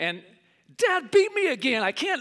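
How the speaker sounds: high, tearful mock sobbing, crying. Retelling running in to mom after dad beat them again, imitating crying. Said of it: "and I'm just like crying".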